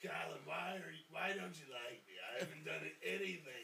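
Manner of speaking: put-on old Brooklyn woman voice.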